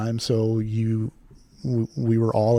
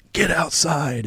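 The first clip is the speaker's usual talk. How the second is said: put-on, pitched-up, mild drill instructor half-shout; 6 semitones higher than usual. Retelling how the red shirts ordered the class outside: imitating someone screaming. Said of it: "and they start screaming".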